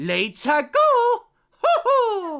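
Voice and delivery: booming, high, swooping cheer with stretched-out ho. Telling chat he will switch voices, then speaking in Mario voice. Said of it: "in Mario's voice".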